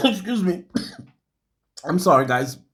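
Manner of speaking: choking, voice catching on saliva. Speaker apologizing to the audience mid-story, choking on own saliva. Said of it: "I'm choking uh, from my own saliva".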